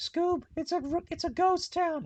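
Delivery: very high-pitched, loud yell. Acting out a scene of the cartoon: yelling Scooby-Doo voice. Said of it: "Scooby and Shaggy just yelling".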